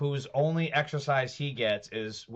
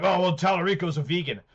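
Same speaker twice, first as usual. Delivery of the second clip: loud, scornful, sneering mocking voice; 4 semitones higher, 4 dB louder than usual. Mocking the followers who believe a campaign claim: mocking imitation of gullible followers.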